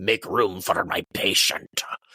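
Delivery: chilling, sinister, ominous tone. Retelling a film scene, quoting Sartain dragging the body: imitating Sartain's sinister voice. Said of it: "such a sinister sound in his voice of".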